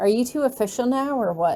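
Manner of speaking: ordinary delivery, nothing marked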